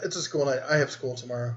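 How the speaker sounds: ordinary delivery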